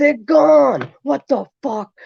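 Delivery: mock very high, shrill, panicked screaming yell. Telling a story about freaking out at someone, retelling own yelling. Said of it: "I started yelling, screaming at him".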